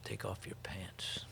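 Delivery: grave, serious, very hushed whisper. Retelling an order given in a back room: imitating someone saying it seriously. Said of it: "he looks at me really serious and says".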